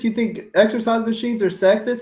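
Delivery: put-on outraged yelling. Imitating imagined commenters who object to a take: imitating people yelling. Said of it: "there's gonna be people yelling".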